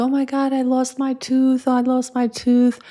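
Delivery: mock weepy, high, tearful little girl crying. Retelling how a daughter came crying about a lost tooth: imitating a crying daughter. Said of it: "daughter came to her mother crying".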